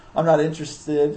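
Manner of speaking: ordinary talk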